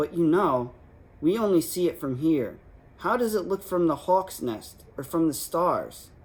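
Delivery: ordinary delivery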